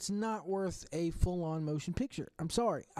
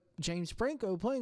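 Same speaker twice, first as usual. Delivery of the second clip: ordinary talk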